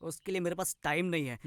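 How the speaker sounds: ordinary delivery, nothing marked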